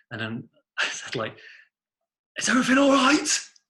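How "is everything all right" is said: put-on very high, loud shout in a northern accent. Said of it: "Like that".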